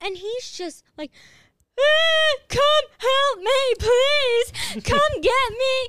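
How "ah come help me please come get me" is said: put-on dramatic scream, higher and louder. Retelling a phone call from a man found in a field: imitating someone screaming dramatically. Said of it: "full on screaming at me".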